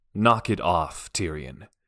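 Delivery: sternest, strict fatherly voice. Reading a story aloud, a father telling someone to stop: sternest dad voice. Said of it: "in his sternest dad voice".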